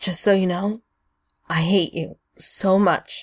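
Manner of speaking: badly trembling, shaking voice. Narrator reads a character kneeling on the floor speaking, shaking voice. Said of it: "Stiles' voice is shaking horribly".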